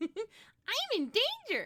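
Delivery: very high, loud, squeaky, swooping sing-song voice. Reacting to a scary board during a card game: Ralph Wiggum voice. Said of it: "That's my Ralph".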